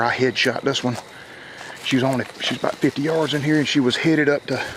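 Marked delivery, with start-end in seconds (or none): none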